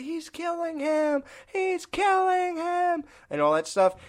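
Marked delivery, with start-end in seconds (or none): 0.0-3.0 put-on very high, long, drawn-out horror-film scream. Describing a scene that bothers them, the speaker imitates her screaming: imitating someone screaming. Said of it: "when she's screaming".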